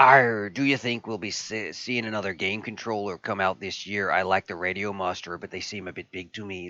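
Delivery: talking like a sea pirate. Reading a viewer's question aloud while talking like a pirate. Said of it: "I should just talk like a pirate".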